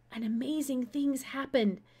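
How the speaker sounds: in a kind of whisper. Getting up and putting a hand on the narrator's shoulder, a man says it in a kind of whisper. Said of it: "he said in a kind of whisper".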